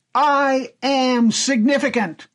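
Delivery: loud shout at a high pitch. Retelling a comic strip scene, acting out a boy under the starry sky: retelling a shout. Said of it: "he shouts out".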